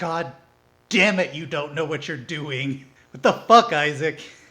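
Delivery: put-on desperate voice. Describing how she reacts to Isaac, imitating a desperate voice. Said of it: "this like voice of desperation".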